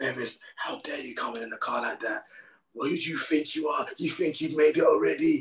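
put-on, high, furious ranting tirade. Retelling how a man screamed at the speaker over the car, retelling a furious rant. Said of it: "this guy is actually going off".

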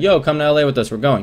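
ordinary talk

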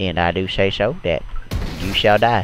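put-on slow Southern drawl. Playing a zombie map and joking around: Matthew McConaughey voice. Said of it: "my name is Matthew McConaughey".

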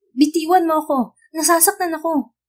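high, loud scream full of pain. Narrator reads Angel, her arm grabbed by a man: screaming. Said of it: "Sigaw niya".

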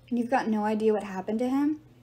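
plain reading voice

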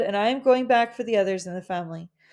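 plain reading voice

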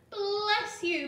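very loud, high-pitched joyful cry. Narrator reads a general answering a woman's offer of help; cried out joyfully. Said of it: "cried General App".

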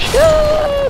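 high, loud battle scream.

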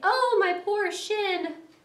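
very high, drawn-out, pained wail. After tripping and falling on his face, the mole speaks: crying out in pain. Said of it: "he cried".

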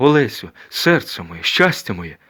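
crying out loudly. Recognizing the girl at the well, the flying one calls out to her, cried out. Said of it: "крикнув летючий".

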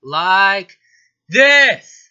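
blaring loud speech. Showing a raised speaking volume: too loud. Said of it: "a little too l-, loud, sorry".

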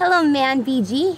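normal talking voice

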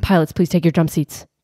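put-on nervous pilot announcer voice. Retelling a flight story, quoting the pilot's announcement, imitating a nervous pilot. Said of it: "in a very kind of nervous voice is like".

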